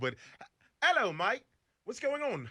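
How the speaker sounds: bad British accent sliding into Australian, very high. Asked how he'd do his best british accent for an audition, attempting a british accent. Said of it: "how would you do your best British a- accent?".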